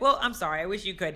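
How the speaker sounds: play-acted, patronizing, superior, condescending tone. Retelling a character's line from a show: imitating a condescending tone. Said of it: "this condescending".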